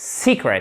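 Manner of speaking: secret with weight on first syllable se-. English lesson on the third piece of advice: stress on first syllable of secret. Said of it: "Accent tonique sur la première syllabe".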